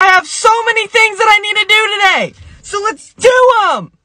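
all-out hype yell. Starting a busy day, yelling to motivate the viewers: yelling. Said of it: "I'm yelling".

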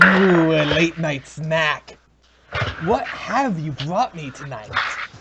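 loud, slow, drawn-out, deliberate demon voice. A game narrator voices the demon looking up at the party: demon voice. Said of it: "the demon, looks up and says".

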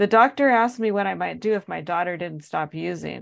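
ordinary delivery

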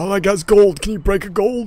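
put-on elderly man voice. In a tabletop role-play, a player character speaks to a restaurant owner, old man character voice. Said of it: "I assume you're an old man".

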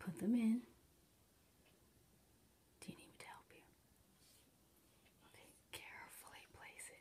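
very quiet, hushed whisper. Guiding someone to carefully place something, whispering. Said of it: "I don't know why I'm whispering".

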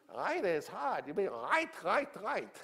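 very high, animated, swooping sing-song voice. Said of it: "he talked like I'm gonna talk".

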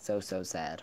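very sarcastic, mock pitying, fake sympathetic tone. Commenting on another speaker pulling off her fake nails: sarcastic. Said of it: "very sarcastic".

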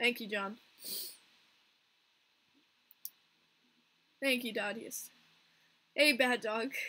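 tearful voice, speaking through tears. Streamer thanking viewers by name at the end of a stream, crying. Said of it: "why is everyone coming when I'm crying?".

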